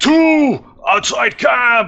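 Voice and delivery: shrill, very high, alarmed orc shriek. Voicing an orc who spots intruders and calls out: orc screaming at top of lungs. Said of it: "He starts screaming at the top of his lungs".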